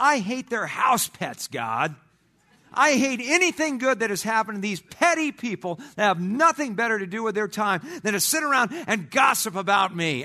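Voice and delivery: high, furious, angry yelling rant. Recounting being out alone on a fire road, retelling a yell. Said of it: "And I'm just yelling it at this point".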